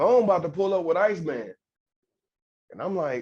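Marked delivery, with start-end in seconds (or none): none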